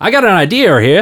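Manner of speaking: high, loud New England accent, idear.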